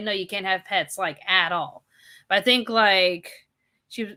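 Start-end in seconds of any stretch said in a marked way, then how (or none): none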